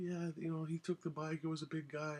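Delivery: acted, very high, tearful crying voice. Retelling answering her after being beaten up, imitating himself crying. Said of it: "And I'm crying".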